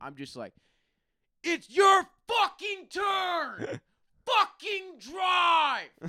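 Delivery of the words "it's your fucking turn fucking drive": slow, very loud, shrill, drawn-out screaming. Retelling yelling at drivers from inside the car, re-enacting a scream. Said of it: "I'm literally screaming in my car at them".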